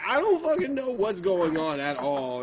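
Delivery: ordinary delivery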